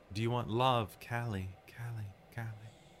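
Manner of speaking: airy, otherworldly female voice. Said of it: "speaking with this very ethereal voice".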